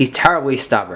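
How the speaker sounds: plain reading voice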